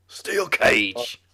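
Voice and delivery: loud, high-pitched, cool-toned delivery. Showing how a wrestling figure makes a match type sound intense: William Regal voice. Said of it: "but then William Regal says it".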